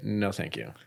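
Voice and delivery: low, snide, sarcastic tone. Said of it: "in a really very sarcastic dick way".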